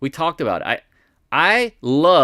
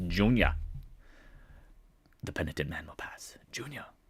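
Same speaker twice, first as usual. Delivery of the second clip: breathy, whispered put-on voice; 5 semitones lower, 12 dB quieter than usual. Looking at a chart of junior miners, joking in Sean Connery voice. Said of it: "the Sean Connery".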